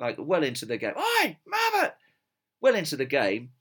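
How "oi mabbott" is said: very high, jeering, shouted heckle. Recalling a match, the speaker imitates a fan shouting at a player. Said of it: "he was shouting out".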